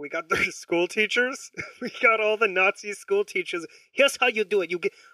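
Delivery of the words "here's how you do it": put-on Japanese-sounding accent, higher. Joking about getting Nazi school teachers, voicing one of them in a Japanese-sounding accent. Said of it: "I don't know why I just sounded Japanese".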